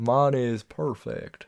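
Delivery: put-on Southern drawl. Giving the movie a rating: Logan Lucky character voice. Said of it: "You sound like a character".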